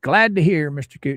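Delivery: normal talking voice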